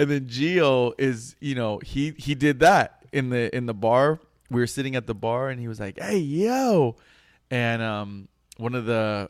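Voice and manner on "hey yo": mock scream, much higher. Retelling what a guy you sat with at the bar did, imitating a scream. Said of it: "He screamed it".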